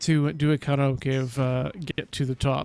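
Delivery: plain reading voice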